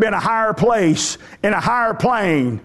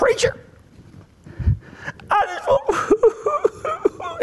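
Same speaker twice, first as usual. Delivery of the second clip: put-on high old person voice, much slower; 3 dB quieter than usual. Retelling an old man standing up in church to address the preacher, imitating Slick's high emotional voice. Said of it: "his voice went high".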